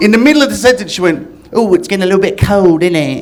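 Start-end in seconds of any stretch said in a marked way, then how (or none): 1.5-3.2 put-on sudden switch into a posh English accent. Retelling an Australian girl suddenly switching mid-sentence into a Basil Fawlty-style English accent. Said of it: "are you Basil Fawlty?".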